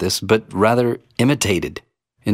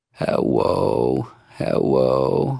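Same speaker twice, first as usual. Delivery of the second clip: put-on cartoon voice with vocal fry, lower pitch; 3 semitones lower, 7 dB quieter than usual. Giving an example of how a vocal fry sounds in speech by imitating a well-known cartoon character; cartoon voice impression. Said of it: "former U.S. President Bill Clinton with his".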